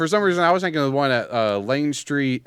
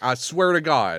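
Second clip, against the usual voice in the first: normal talking voice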